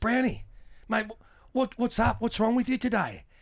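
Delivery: mock-unruffled, very calm tone, slightly high-pitched. Retelling what Clarko said on the phone: imitating Clarko speaking very calmly. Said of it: "very calmly".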